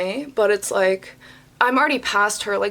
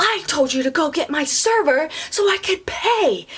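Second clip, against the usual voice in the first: acted, furious, high angry yell; 7 semitones higher than usual. Retelling a customer standing and pointing, imitating someone yelling. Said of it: "this lady is literally yelling at me".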